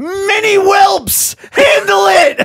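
acted frantic outburst, very high, loud and slow. Retelling a raid leader's outburst in a game: imitating someone flipping out. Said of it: "he starts flipping out".

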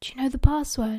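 ordinary delivery

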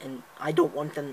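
breaking voice, cracking mid-phrase. Telling how you emailed the company back about your subscription, voice cracking. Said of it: "That voice crack".

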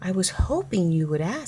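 plain

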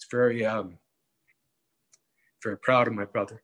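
choked-up voice catching with emotion. Talking to Joe about his brother's last years, choked up. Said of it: "I'm getting choked up".

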